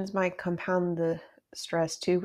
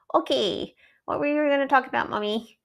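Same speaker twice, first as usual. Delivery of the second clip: put-on, pitched-up puppet character voice; 10 semitones higher, 6 dB louder than usual. Playing a small animal character in a made-up exchange with a parent, putting on the character's voice. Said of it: "it's a little tricky to do her voice".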